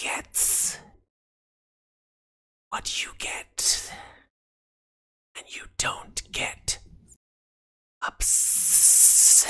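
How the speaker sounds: raspy, half-whispered snake voice. The snake turns back toward the player after slithering from the bracelet, raspy snake voice. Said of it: "in a raspy voice, the snake says".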